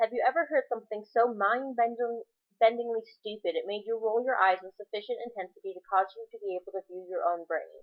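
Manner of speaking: usual speaking voice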